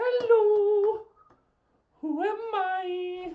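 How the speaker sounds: shrill, very loud, high, with "I" stretched out. Retelling a character's lines from a show: Miss Piggy voice. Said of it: "she says it like Miss Piggy".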